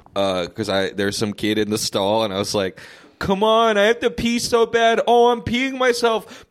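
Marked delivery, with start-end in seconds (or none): 3.2-6.2 mock screaming, very high and urgent. Retelling yelling at a kid in a bathroom stall: retelling own scream. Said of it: "screaming it".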